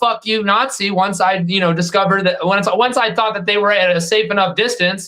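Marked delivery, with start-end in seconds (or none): 0.0-0.9 put-on yell, higher. Retelling what was yelled at people walking away from a protest: imitating a yell. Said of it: "I would yell".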